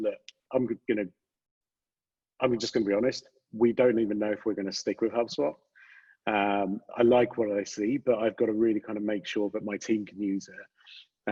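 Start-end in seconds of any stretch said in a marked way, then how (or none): none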